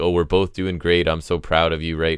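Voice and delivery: imitated condescending voice. Retelling how one wrestler spoke to another, imitating a condescending tone. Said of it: "Angels is kinda condescending, like".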